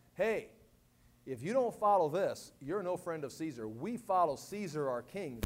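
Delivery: ordinary talk, nothing marked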